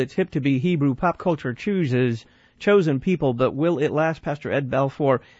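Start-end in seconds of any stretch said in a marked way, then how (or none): none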